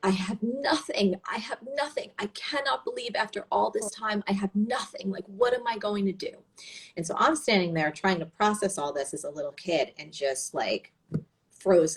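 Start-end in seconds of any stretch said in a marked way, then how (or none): 0.0-6.3 put-on fearful crying, high, sobbing and distressed. Recalling mom on the phone with her own mother, imitating scream crying. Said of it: "she was like scream crying and saying like".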